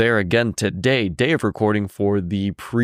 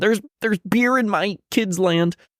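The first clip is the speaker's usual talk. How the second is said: put-on scream, much higher pitch; 10 semitones higher than usual. Speaker imagines a mean Karen, imitating her screaming. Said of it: "Don't want the mean Karen screaming".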